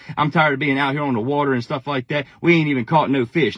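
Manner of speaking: usual speaking voice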